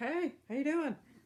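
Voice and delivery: very high, squeaky cat voice. Holding up the cat and speaking for it: voicing the cat. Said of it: "He's like".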